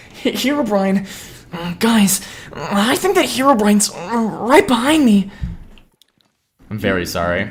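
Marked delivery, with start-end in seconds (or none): 0.3-5.3 very high-pitched, cringe-worthy voice. Joking on stream that Herobrine is right behind: cringe Deku voice. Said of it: "cringe Deku voice".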